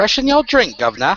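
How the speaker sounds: put-on Cockney accent. Doing an accent for listeners to guess, an attempted cockney accent. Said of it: "give you an accent".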